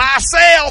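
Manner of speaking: loud blurted holler, very loud and high-pitched. Retelling a man shouting during a preacher's sermon: retelling a loud shout. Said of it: "He gets real loud".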